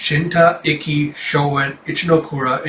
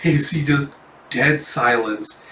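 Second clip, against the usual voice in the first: normal talking voice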